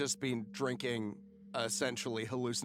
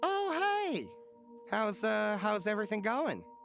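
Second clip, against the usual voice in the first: high, bright-pitched voice. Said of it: "And Dan looks up and says".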